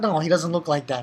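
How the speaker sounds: ordinary talk, nothing marked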